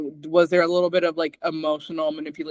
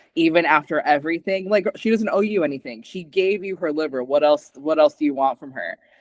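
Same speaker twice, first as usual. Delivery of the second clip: ordinary talk, nothing marked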